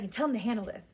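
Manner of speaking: mock irritated, demanding woman's voice. Retelling a lady behind them on a stalled ride: imitating an irritated lady. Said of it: "she's all irritated".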